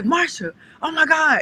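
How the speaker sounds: acted panicked outburst. Retelling how a husband reacted to a fall: imitating panicked husband. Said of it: "So he's panicking".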